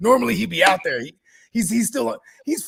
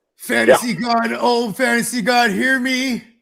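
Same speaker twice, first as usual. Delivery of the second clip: loud, fake solemn, chant-like intoning; 4 semitones higher, 6 dB louder than usual. Saying a joke prayer to the fantasy god: mock pagan-sounding prayer. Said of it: "Why does that sound so pagan?".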